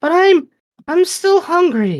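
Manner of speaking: very high, sing-song, swooping creature voice. Voicing the creature speaking in the player's mind: creature voice. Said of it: "the creature stops in your mind's eye".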